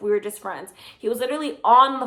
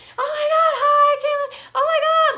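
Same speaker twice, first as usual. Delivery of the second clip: acted very high-pitched, giddy, excited tipsy voice; 3 dB louder than usual. Retelling greeting a friend on a night out, imitating drunk excitement. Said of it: "we were just drunk".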